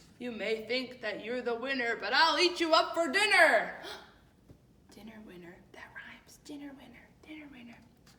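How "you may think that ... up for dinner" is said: big, menacing, booming giant voice, very loud. Telling the beanstalk story, the narrator voices the giant threatening Jack: deep giant voice. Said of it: "I'm going to use a deep voice for the giant".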